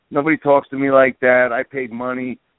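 ordinary delivery

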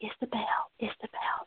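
gentle, calm, sweet, soothing whisper. Speaker reenacts addressing a child, Isabel, retelling a calm sweet whisper. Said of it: "try to speak to her in a calm whisper, kind of sweeter voice".

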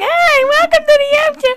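very high, loud, whiny voice. Mocking how they sound on the radio, in a mock whiny voice. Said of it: "this whiny, sissy-ass voice".

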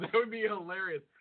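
normal talking voice

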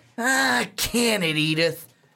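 very slow, drawn-out, condescending, dismissive tone. Retelling how Archie Bunker talked down to his wife: Archie Bunker talking down. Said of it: "The tone that he would use".

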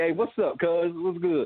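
casual, relaxed California-style way of talking. Contrasting with how people greet each other: imitating a california greeting.

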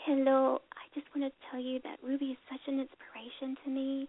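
hushed, whispery, half-whispered voice. Retelling a strange call to the show from a caller: imitating a caller's whisper. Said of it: "just kind of whispering and stuff".

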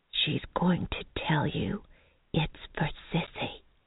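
soft, hushed whisper under the breath. A woman walking beside her companion in a store, whispering. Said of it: "Mary whispered".

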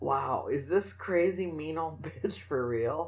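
slow, incredulous, disbelieving listener voice.

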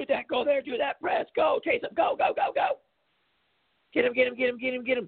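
acted, shrill, very high, top-of-lungs screaming coach voice. Mocking coaches who fake it by yelling from the sidelines, mock screaming coach. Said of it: "jumping and screaming at the top of my lungs".

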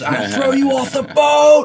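very high, shrill, loud screaming. Retelling what he screamed after the gaff was lost: imitating someone screaming. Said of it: "He's screaming at me".

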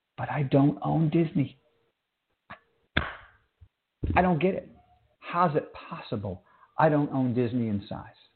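hushed, embarrassed whisper. Speaker making an embarrassing admission to listeners, embarrassed whisper. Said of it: "I have to whisper it".

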